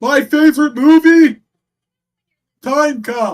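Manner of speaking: exaggerated announcer promo voice, very high and loud. Complaining about how Tony Khan talks, mocking his Tony Khan promo voice. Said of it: "But he talks like this".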